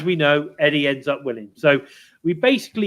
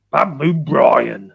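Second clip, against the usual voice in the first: put-on pirate impression. Discussing a wrestling storyline, the speaker says the wrestler's name in a pirate voice. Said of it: "I can actually do a very good pirate impression".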